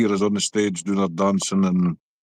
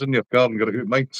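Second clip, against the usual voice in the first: plain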